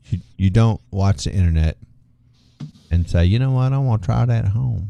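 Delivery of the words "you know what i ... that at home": put-on, full hillbilly accent and voice. Speaker acts out someone who watches the internet and tries it at home, hillbilly voice. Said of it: "this is my best hillbilly voice".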